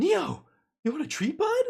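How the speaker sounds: very high-pitched pet talk voice. Calling Neo over with a treat offer: very high-pitched voice. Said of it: "I gotta speak really high. My tone has to be quite high".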